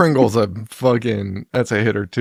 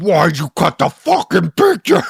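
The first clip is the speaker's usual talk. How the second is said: mock screamed outburst, high, climbing upward in pitch; 6 semitones higher, 3 dB louder than usual. Retelling a movie's opening scene, imitating Miguel Ferrer screaming. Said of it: "Miguel screaming at this woman".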